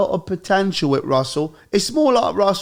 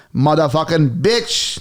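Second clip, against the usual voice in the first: put-on Sri Lankan accent. Doing a comedic sketch bit, in a Sri Lankan accent. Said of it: "This is more Sri Lankan".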